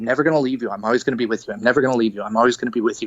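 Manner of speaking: fast, insistent, sobbing put-on bawling. Retelling a dream, the speaker quotes their dad, imitating someone bawling. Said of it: "he's crying, like bawling".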